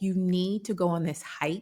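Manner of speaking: ordinary talk, nothing marked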